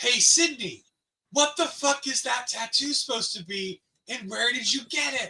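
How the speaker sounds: high, jeering, heckling call. Retelling how the speaker yelled at a man standing feet away, retelling a yell. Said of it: "So I yelled at him".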